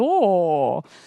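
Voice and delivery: mock connoisseur "oh", low and savoring.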